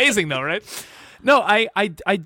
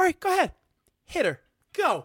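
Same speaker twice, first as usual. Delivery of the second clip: mock, very high, exasperated lost-it outburst; 10 semitones higher, 6 dB quieter than usual. A speaker retells an argument about disciplining Emmy, imitating Sarah losing it. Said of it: "And Sarah lost it".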